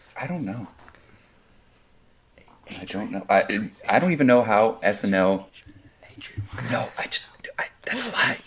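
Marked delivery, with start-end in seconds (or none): 6.7-8.3 whispering. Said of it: "Why are we whispering?".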